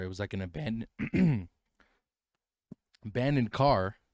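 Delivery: voice cracks in the middle of abandoned. Telling someone about a place you used to go to, with your voice cracking. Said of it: "Voice crack".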